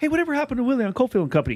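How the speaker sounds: mock nosy gossip, high, rushed, blurted out fast. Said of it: "I'll be the guy where be like".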